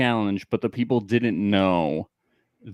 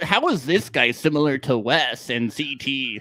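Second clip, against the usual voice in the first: mocking lame voice, higher; 5 semitones higher than usual. Mocking other challenge podcasts in a lame voice. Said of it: "You say it in a lame voice".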